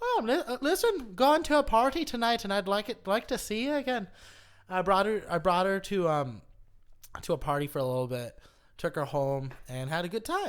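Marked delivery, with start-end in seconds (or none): 0.0-4.1 high, fake put-on Irish accent. Calling a woman the next day to invite her to a party, fake irish accent. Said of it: "I called her up with the I- fake Irish accent".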